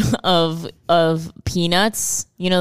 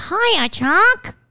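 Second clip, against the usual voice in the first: very high, cartoon-style girl's voice. Showing how a cartoon girl greets her friend: Peppermint Patty voice. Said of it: "It's like".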